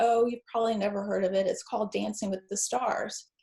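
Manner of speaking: ordinary talk, nothing marked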